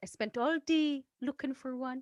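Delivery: clumsy attempt at Geordie accent. Imitating a guy's words from a clip, attempting a bad Geordie accent. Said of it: "That's not Geordie at all".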